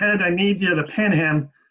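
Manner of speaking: nasally, through-the-nose voice. Speaker retelling a wrestling match, quoting his coach: imitating Ferraro's nasally voice. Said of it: "in his nasally voice".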